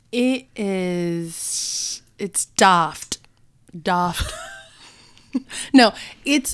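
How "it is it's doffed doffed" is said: bad, weak attempt at an English accent. Describing English-style makeup, attempting a bad English accent. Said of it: "She's trying to do an English accent right now".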